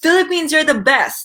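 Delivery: put-on loud, high-pitched shout. Retelling a man shouting among fans at the hotel: imitating someone shouting loudly. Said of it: "He shouted, like, so loud".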